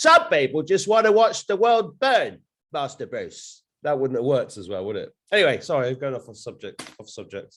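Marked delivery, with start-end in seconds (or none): 0.0-3.6 very high-pitched, slow, shouty delivery. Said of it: "I miss the shouty Michael".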